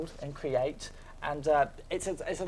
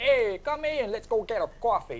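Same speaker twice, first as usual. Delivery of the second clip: put-on New York accent, slow and pitched up; 8 semitones higher, 4 dB louder than usual. Describing the SimCity tutorial guy, quoting him in a put-on New York accent. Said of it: "he's got a New York accent, he's like".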